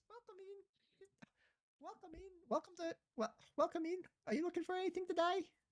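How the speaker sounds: very high, squeaky little gnome voice. Voicing a gnome shopkeeper greeting a customer: gnome man voice. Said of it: "he kind of waddles over to you and says".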